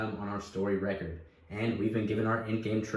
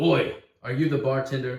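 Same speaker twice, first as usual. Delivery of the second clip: put-on drunken shouting, higher and louder; 4 semitones higher, 7 dB louder than usual. A narrator voices a drunken dwarf calling out about the bartender, shouting. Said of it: "The dwarf shouts".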